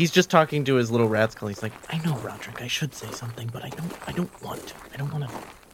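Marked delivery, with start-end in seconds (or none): 1.9-5.3 hushed character whisper, quieter. Voicing a character talking to his rat skull: whispering in character. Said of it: "What are you whispering about".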